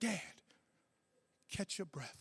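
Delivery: gentle, very hushed, very quiet soft voice. Quoting his daughter, a teacher, speaking to him: softer tone. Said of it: "In a softer tone".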